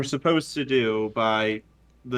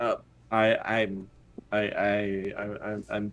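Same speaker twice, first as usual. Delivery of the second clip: scared stammering, much quieter and slower; 4 semitones lower, 6 dB quieter than usual. Asked whether he will open the gate, a man gives a nervous stutter. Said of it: "He kind of stutters and he looks very, very like scared".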